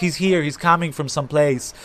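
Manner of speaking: ordinary talk, nothing marked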